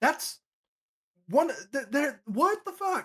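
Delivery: high, exasperated venting. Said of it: "and I'm like".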